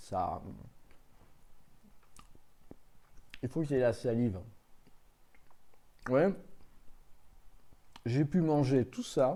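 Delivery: speaking with a full mouth, chewing. Describing a meringue-like food while eating it, talking while chewing. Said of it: "le bruit de bouche quand je suis en train de manger".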